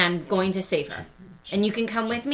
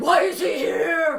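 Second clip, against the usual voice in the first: slow, pitched-up spooky voice that cracks partway; 7 semitones higher, 3 dB louder than usual. Casting a spell to call out in character: scary voice. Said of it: "My scary voice".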